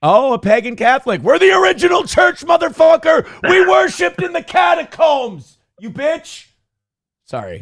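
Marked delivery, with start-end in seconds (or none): 0.0-6.5 shouting, higher and louder. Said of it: "I'm yelling like a Coptic".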